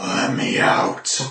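creepy voice. Voicing someone behind a door asking to be let out: freaky voice. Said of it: "I would have nightmares about that voice now".

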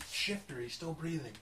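speaking very quietly. Telling another character secretly that one victim is alive: whispering in character. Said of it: "I'm saying it really quietly".

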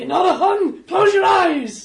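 put-on shouting American male accent. Shouting in character to the people around, in an American male accent. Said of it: "obviously in an American male accent".

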